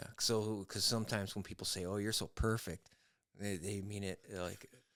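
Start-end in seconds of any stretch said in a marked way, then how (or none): 1.8-2.9 mock sarcastic tone. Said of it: "I didn't hear a bit of sarcasm".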